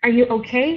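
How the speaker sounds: voice climbing on okay. Teacher explains how to ask questions in English: voice rising at the end. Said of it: "You can raise your voice like that".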